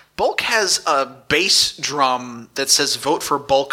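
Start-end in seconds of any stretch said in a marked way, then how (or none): none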